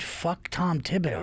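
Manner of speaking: normal talking voice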